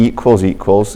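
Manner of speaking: equals equals stressed with a rising pitch. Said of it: "emphasis on equals equals".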